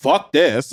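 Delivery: ordinary talk, nothing marked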